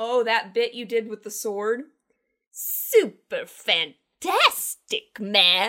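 mock drunk, strange line delivery. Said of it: "a very strange deliveries".

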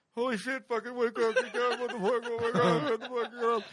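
put-on half-asleep voice. Retelling a chimpanzee dream, telling your body to get up; acting half-asleep. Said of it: "half in and out of sleep".

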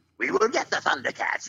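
high, villainous cartoon mutant voice. Explaining how he came up with the voice, doing the Jackalman mutant voice. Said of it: "a mutant sounding voice for Jackalman".

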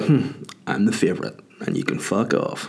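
mock, smug, self-satisfied gloating tone. Retelling looking at people while holding the baby's hand: imitating own smug look. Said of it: "a big fat smug face, just looking at people like".

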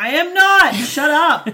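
play-acted woozy, groggy voice, very loud, very slow, drawn-out. Retelling arguing back after getting wisdom teeth out: imitating half-anesthetized self. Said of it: "me still half anesthetized being like".

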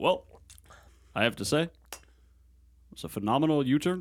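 sounds like a navigation system. Imagining a GPS voiced by Obama: Obama impression. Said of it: "an Obama, uh, uh, uh, G P S".

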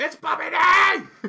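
shrill, very high-pitched, very loud scream. Retelling a line a character yells at Thompson: imitating a yell. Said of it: "He yells at Thompson".

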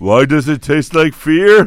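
loud, booming, slow, drawn-out pro-wrestler promo voice. Joking about eating a basket, in a put-on wrestler voice. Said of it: "that impression sounds like a wrestler that went to jail".

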